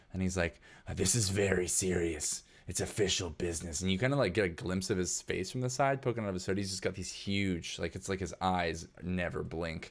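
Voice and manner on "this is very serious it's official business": odd, rough, gruff character voice. Voicing a robed man arguing with a bot: weird gruff voice. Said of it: "He's got kind of a weird, gruff voice".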